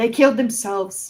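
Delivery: whispering. In a live performance scene, answering Red's accusation, whispering. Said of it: "I'm whispering, sorry".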